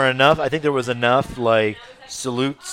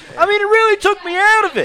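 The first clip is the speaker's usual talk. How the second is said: put-on wrestling promoter rant voice, higher and louder; 6 dB louder than usual. Redoing another speaker's lines about the show as Jim Cornette. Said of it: "I'm gonna do it as Jim Cornette".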